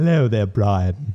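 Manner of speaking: put-on cartoon character voice. Saying they can do it too, trying a cartoon impression: Stewie voice. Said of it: "I can kind of do the Stewie voice too".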